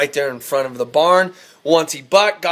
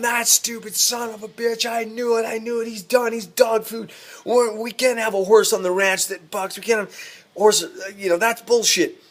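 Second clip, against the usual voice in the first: high, irate, furious rant at full yell; 7 semitones higher, 3 dB quieter than usual. Telling a ranch story, acting out the speaker's dad yelling angrily about a horse. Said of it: "He's just yelling".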